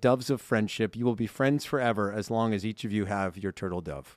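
ordinary talk

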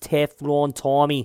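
poor, put-on, mock New England accent. Sports commentator saying a player's nickname, horrible new england accent. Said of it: "that's a horrible new england accent".

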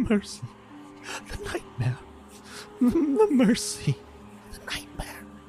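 very high, muttered mumble. Narrating to the party, the storyteller gives the clutching man's words: mumbling. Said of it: "he just mumbles".

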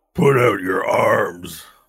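slow, loud orc guard voice. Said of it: "one of the orcs comes lumbering up to you, Varel, and goes".

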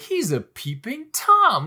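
crushed, utterly let-down disbelief, slow, swooping pitch. Retelling how Marty says a line about his father: imitating Marty, let down. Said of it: "he's just so let down".

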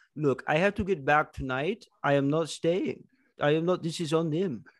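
imitated Saudi Arabian accent. Voicing a snorkeling worker brushing off missing swimmers: put-on Saudi Arabian accent. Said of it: "that was more of, like, a Saudi Arabian guy".

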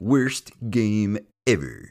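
swooping, wide-swinging pitch, cartoon-character voice. Imitating a PC gamer type: Comic Book Guy voice. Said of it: "sounding exactly like the comic book guy from The Simpsons".

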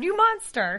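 sudden, high-pitched screamed outburst. Retelling how a character screamed at another: imitating someone screaming. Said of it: "she screamed".

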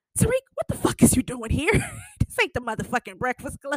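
put-on abrupt shift to harsh, fast, swooping tone. Retelling a scene where Tate gets Tariq alone: imitating Tate's sudden changed tone. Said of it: "he changed that whole tone up real quick".

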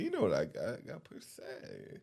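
whispered, hushed, sassy put-on pimp voice. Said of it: "Why you say it like that?".

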